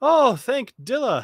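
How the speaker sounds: shrill, very high, very loud outcry. Voicing a man hanging upside down by a rope, asking for help. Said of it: "he says".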